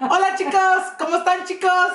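high, laughing put-on voice.

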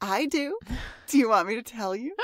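soft, little, seductive evil voice. Podcaster recaps an episode, in Willow's seductive evil voice. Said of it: "There's something about the little seductive evil".

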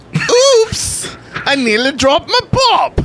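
put-on terrible English accent, pitched very high. Reading out a sponsor's message on the show, the speaker uses the worst English accent. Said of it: "That was the worst English accent".

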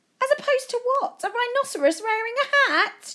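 very high, exclaimed crying out. A boy answers another speaker's advice, crying out. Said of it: "Joe cried".

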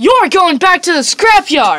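very loud, bouncy cartoon hero voice, swooping pitch. Trying out a voice line while a partner coaches, in a Sonic voice. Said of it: "I went for Sonic there".

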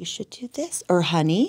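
imitated whisper. Recalling her role as a wife, imitating her own whisper. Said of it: "the wife that just, like, whispers".

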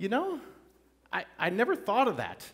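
mock sarcastic tone. Acting out a listener's reply to comforting words: acting out a sarcastic reply. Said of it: "this is a little sarcastic".

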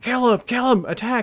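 very high, urgent screamed yell. Recounting leading a charge, shouting orders to a clanmate; retelling a scream. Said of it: "I scream".

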